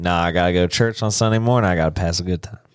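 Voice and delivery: put-on Southern-accented delivery. Explaining a phrase, acting out turning down an invitation in a Southern accent. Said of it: "I'm going to say a little bit more like Southern".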